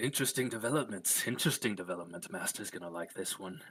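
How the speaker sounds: chuckling away to himself, sounding pleased. Narrating a character who thinks he's alone in a side alley, muttering under his breath. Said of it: "mutter under his breath".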